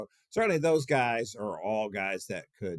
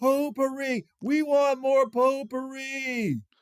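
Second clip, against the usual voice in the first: mock, very high, very slow, drawn-out scream; 5 dB louder than usual. Retelling what people on the street do: imitating people screaming. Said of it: "people are screaming at me".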